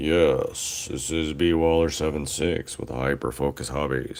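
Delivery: deep, dropped, put-on low voice. Speaker introducing himself and his channel, in his allergy low voice. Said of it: "allergy low voice".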